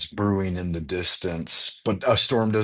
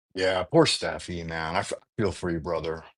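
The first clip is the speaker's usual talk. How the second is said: ordinary talk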